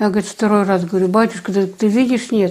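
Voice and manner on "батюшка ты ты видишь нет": normal talking voice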